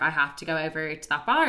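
plain

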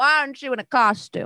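swooping woman's voice. Voicing a purple-skinned woman who opens the door to trick-or-treaters: purple-skinned woman's voice. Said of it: "she's like".

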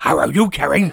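poor cartoon dog impression. Greeting Carrie at the start of a comic talk: Scooby-Doo voice. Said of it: "This is my voice of Scooby-Doo".

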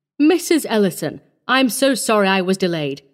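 usual speaking voice

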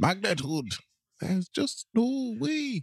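put-on high, slow Scottish accent. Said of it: "when you try your Scottish accent".

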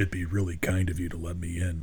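intense deep voice. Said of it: "Intense, deep voice".

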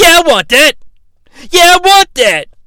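put-on very high, squeaky little-kid voice. Retelling a wrestler demanding the title belt: imitating Ken Shamrock sounding childish. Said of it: "He just sounds like a little kid".

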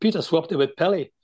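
plain

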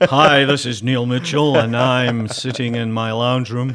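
loud, showy put-on radio announcer delivery. Mocking a reluctant partner by showing a put-on radio voice. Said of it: "give us a sample of your best radio voice".

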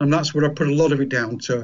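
fast, rushed delivery.

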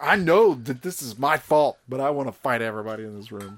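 ordinary delivery

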